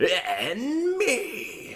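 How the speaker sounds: crazy manic energy, very high with swooping pitch. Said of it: "the crazy".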